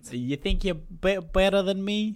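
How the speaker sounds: put-on Boston accent. On a podcast, co-hosts take turns trying Boston accents; in a Boston accent. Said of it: "That's what everyone says in their Boston accents".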